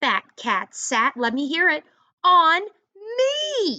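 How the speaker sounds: loud, rising exclamation said with feeling.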